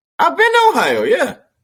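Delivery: voice leaping up very high, octave jump. Insisting to the other speaker about having been to Ohio: voice going up an octave. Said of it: "your voice just went up an octave".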